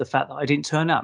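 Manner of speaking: ordinary talk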